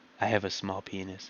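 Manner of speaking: very quiet, hushed, soft voice. Speaker explains that liars must talk quietly, then demonstrates: talking really quiet. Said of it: "you got to talk really quiet like this".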